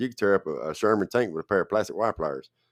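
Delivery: ordinary talk, nothing marked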